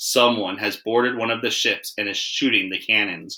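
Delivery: ordinary delivery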